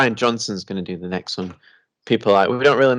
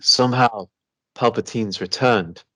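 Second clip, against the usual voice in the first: disappointed, let-down delivery. Showing an impression of an actor's line from a film: Oscar Isaac impression. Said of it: "my impression of Oscar Isaac in that film".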